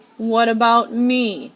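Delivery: furious, loud, angry screech. Reading a fairy tale aloud, giving Cinderella's line as an angry screech. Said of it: "she screeched".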